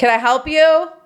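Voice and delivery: high, called-out yell from a distance. Recounting waiting at an empty desk, retelling the lady's yell from the back. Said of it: "she yells".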